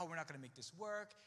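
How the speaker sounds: normal talking voice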